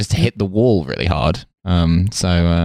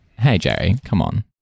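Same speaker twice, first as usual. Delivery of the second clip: usual speaking voice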